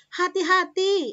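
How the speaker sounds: loud, forceful word. Teaching kinds of sentences, showing a warning: hati-hati said loudly. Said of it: "kalau hati-hati keras ya".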